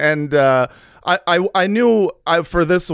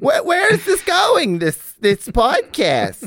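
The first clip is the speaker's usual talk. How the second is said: very high, animated, swooping motherly voice; 10 semitones higher than usual. On a podcast, teasing another speaker with an impression of their mom. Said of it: "This is my impression of your mom".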